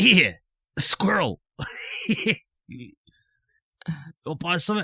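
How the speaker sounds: shifty raspy pixie voice. Voicing a pixie tapping on glass, offering to sell: shifty raspy pixie voice. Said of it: "They all sound so shifty".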